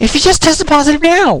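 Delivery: voice cracking. Speaker repeats his own question: voice cracking. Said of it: "Sorry about the voice crack there".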